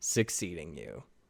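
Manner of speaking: cold delivery. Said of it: "cold response just says".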